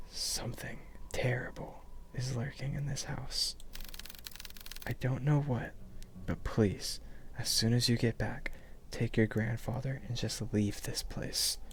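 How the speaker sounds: hushed, breathy whisper. Gripping the phone close, she warns the person on the line in a hushed tone. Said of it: "hushed tone".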